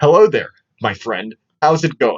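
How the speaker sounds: exaggerated, level American bro party-guy accent. Sounding like a Chad who goes to parties, exaggerated American accent. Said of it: "the most American accent we can think of".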